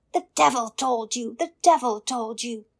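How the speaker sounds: very loud, furious screaming. Reading a fairy tale aloud, the little man discovered: screaming in fury. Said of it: "the little man screamed".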